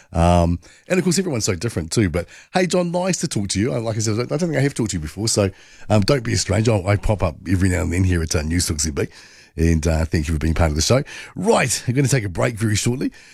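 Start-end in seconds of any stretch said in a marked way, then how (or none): 3.7-9.0 very fast, rushed, rattled-off auctioneer-style patter. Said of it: "you talk too fast. You sound like an auctioneer".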